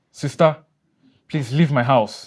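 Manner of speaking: yelling. During an argument, ordering his sister to leave his house, shouting. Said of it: "You're shouting".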